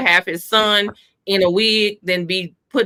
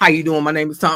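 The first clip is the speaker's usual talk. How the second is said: quick, put-on deep bass voice, laid on; 3 semitones lower than usual. Retelling how an uncle greeted the speaker's boyfriends, in a whole deep voice. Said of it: "this whole deep voice would come out".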